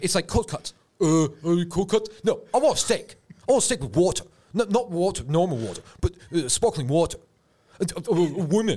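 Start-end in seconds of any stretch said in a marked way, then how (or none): 0.0-7.2 put-on macho influencer cadence, higher. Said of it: "This is a good impression".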